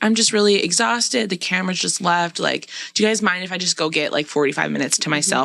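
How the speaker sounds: normal talking voice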